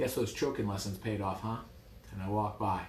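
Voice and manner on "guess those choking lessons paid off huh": plain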